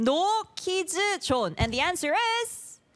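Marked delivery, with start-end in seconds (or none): 0.0-1.5 higher-pitched Korean accent. Asking someone to say a phrase, then saying it in a korean accent. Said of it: "Korean accent".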